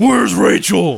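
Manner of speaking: very loud, gravelly, gargling rasp.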